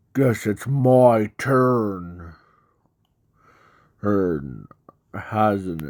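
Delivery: deep, dark, heavy monster growl. Telling a fan story, the monster-form character speaks up, deep, dark voice. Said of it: "in a deep, dark voice".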